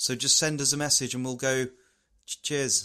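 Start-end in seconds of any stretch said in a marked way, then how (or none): none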